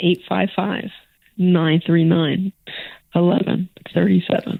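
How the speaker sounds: sultry, seductive, sexy delivery. Repeating a call-in phone number for listeners, sexy delivery at the end. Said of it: "that was sexy at the end".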